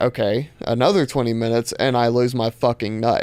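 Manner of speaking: ordinary talk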